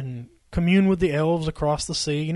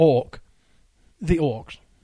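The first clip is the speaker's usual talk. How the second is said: "orcs" said in a put-on British accent. A speaker discussing Middle-earth lore shows how it's said in Britain, British accent. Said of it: "as they say in Britain".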